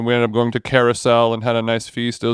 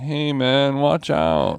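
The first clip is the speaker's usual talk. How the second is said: slow, laid-back, unhurried delivery; 3 semitones higher than usual. Imagining a robed cyclist lightly hitting the asphalt: Big Lebowski voice. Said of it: "Big Lebowski energy".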